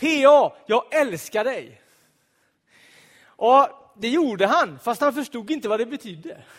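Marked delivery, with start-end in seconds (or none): 0.0-1.8 calling out in a raised voice, very slow, drawn-out. Retelling how he ran out and opened the door on seeing the speaker: calling out loudly. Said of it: "så ropade han med hög röst".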